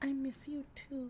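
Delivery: small, very soft hushed voice, high and slow. Retelling a movie scene of a girl talking to her mirror: little voice. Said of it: "a little voice comes out of her".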